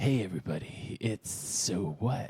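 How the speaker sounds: fake low, sultry voice. Showing how the podcast intro should sound, in a put-on sexy low voice. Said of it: "You sound like you're, like, a seventy-five-year-old".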